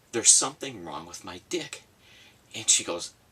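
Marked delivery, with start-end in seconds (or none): 0.2-1.9 mock blunt, pitched-up, blurted complaint. Telling a joke, a man in agony speaks to a receptionist: retelling a loud outburst. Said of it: "he goes in a rather loud voice".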